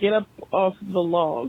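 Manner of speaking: normal talking voice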